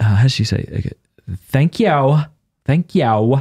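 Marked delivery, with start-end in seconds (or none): 1.5-3.4 put-on valley girl voice, dragged out very slowly. Showing how a woman in Steubenville says it, imitating a valley girl. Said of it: "like a valley girl".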